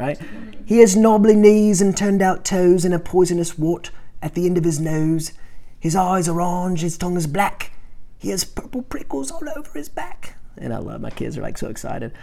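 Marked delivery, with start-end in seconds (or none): 0.7-10.4 higher-pitched put-on British accent. Reading a children's story aloud, the speaker describes the monster in a british accent. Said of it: "That's a pretty good British accent".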